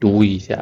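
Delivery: soft, kind, gentle teacher-like tone. Showing how a teacher asks a student to read: gentle teacher tone. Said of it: "Very gentle teacher".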